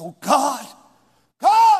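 loud, swooping, angry outburst. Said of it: "when I addressed him like that".

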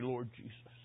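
soft, low, ashamed, remorseful voice. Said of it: "in shame and embarrassment and regret and remorse".

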